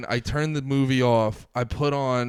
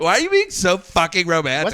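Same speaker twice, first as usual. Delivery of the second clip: bewildered woman's high, loud, swooping outburst; 6 semitones higher, 6 dB louder than usual. Acting out how she reacted to a romantic gesture, as a Steph impression. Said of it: "that is a perfect Steph impression".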